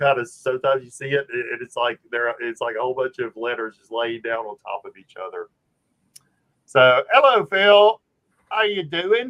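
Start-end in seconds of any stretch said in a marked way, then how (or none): 6.6-9.3 sudden, very loud, slow, put-on British accent. Greeting Phil, suddenly slipping into a British accent. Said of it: "I got a British accent all of a sudden".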